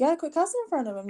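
mock half-joking scolding. Retelling what the speaker told their sister, retelling a joking remark. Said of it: "kind of jokingly".

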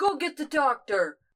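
loud, high shout. Voicing a character at the bar who calls for help: yelling. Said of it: "and yells".

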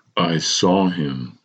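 muttering deliberately. A character says words that shocked even themself, muttered methodically. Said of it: "I muttered methodically".

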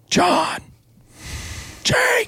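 put-on high scream. Speaker, running toward two distant men, reenacts retelling screaming two names. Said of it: "I start screaming".

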